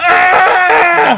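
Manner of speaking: shrieking, very high-pitched spooky scream. Showing how a spooky story would be told around a campfire: put-on spooky campfire scream. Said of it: "if I'd be telling this around a campfire, I'd be like".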